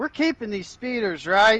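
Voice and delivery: shouting loudly. Yelling to the group while heading back, in character: loud yell. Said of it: "I want to loudly yell about".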